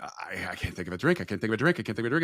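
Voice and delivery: acted-out panicked tone. Retelling being offered a free cocktail while gambling, reenacting panicking. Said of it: "And now I'm like panicking".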